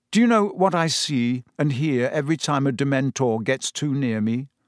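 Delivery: ordinary delivery, nothing marked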